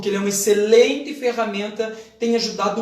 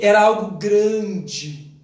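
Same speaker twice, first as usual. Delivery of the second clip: grande stretched out, emphatic and with feeling. Teaching emotion in speech, putting more into the word: emphatic, drawn-out grande. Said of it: "você expressa grande e coloca muito mais as nessa palavra grande".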